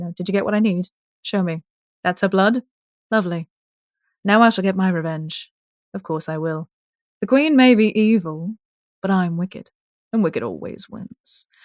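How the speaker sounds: put-on speaking in a British accent. Previewing a character's lines from the next episode, in a British accent. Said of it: "I'll talk in the British accent".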